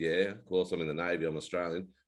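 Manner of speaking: plain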